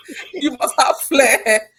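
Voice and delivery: loud, slow, insistent delivery, laughing through.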